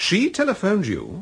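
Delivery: startled, surprised disbelief, very high-pitched. Told that the publisher's wife phoned the other man at his hotel, surprised. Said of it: "You sound surprised".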